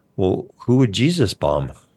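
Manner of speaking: put-on slow, very kind, innocent little boy voice.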